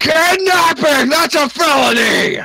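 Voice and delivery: loud high-pitched shout. Game narrator voices a guard as the party is yanked onto the boat: guard yelling. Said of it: "you hear one of the guards yelling".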